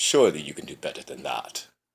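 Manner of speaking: borrowed screen character voice, pitch lifting then swooping. Critiquing a bad movie, the speaker slips into a Count Dooku voice. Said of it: "I'm in my Count Dooku voice".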